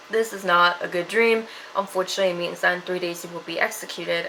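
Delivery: ordinary delivery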